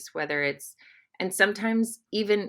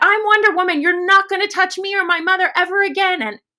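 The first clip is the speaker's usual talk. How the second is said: very loud, very high, shrill scream; 13 semitones higher, 11 dB louder than usual. Speaker recalling standing on a car telling a man to stay away, retelling a scream. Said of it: "I was screaming at the top of my lungs".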